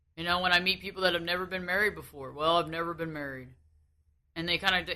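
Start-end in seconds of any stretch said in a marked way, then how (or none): 2.3-3.5 mock dejected, beaten-down tone, lower and quieter. Retelling what never-married people say, imitating someone sounding beaten down. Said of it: "they say it just kinda like their head down".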